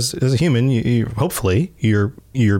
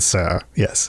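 put-on posh British robot butler voice, lower; 5 semitones lower, 3 dB quieter than usual. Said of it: "he's got a very posh British accent".

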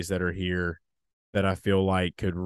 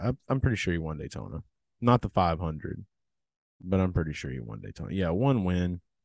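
ordinary delivery

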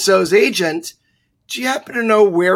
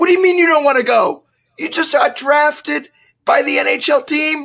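mock, high, incredulous screaming; 7 semitones higher than usual. Recounting her reaction when he refused to join his new NHL team, retelling screaming at him. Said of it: "And I am screaming at him".

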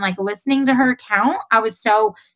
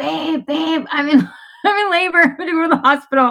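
put-on high-pitched screaming; 6 semitones higher than usual. Retelling calling to a sleeping husband from the bathtub: imitating own screaming. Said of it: "I'm screaming from the bathtub".

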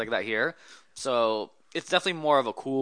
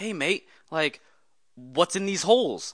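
put-on slow, easy, unhurried Australian accent, pitched up; 6 semitones higher than usual. Recounting a photo shoot, the speaker quotes a guy standing beside them, in an Australian accent. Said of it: "he says in his Aussie accent".

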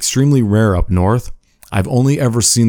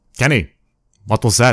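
put-on heavy, thick South American accent; 3 semitones higher than usual. Retelling the boss questioning a coworker over the phone, Victor's thick South American accent. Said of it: "he had a real like thick like South American accent".

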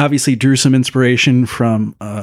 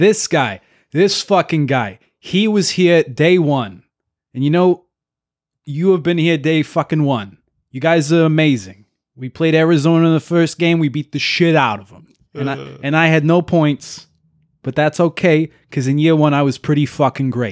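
put-on New Jersey mobster accent; 3 semitones higher than usual. Reading a player's speech aloud for fun, in a new jersey mobster voice. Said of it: "I kind of want to read it as like New Jersey mobster".

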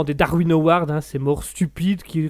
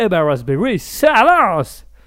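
loud, swooping put-on English accent over French; 3 semitones higher, 5 dB louder than usual. Opening the Raspberry news segment for a show: put-on English accent. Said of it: "De mieux en mieux ton accent anglais".

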